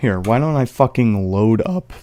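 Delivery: loud delivery, voice cracks partway through. Loading something up while streaming: voice crack. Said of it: "Did you hear that voice crack?".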